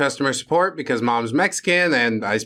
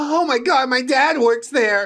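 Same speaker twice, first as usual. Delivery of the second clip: put-on terrified, scared voice; 9 semitones higher than usual. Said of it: "in a terrified voice".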